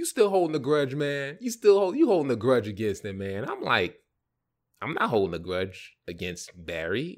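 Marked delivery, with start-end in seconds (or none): 0.0-3.5 mock-playful teasing, higher and faster. Speaker retells what another man said to him, imitating playful teasing. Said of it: "Then he said playfully".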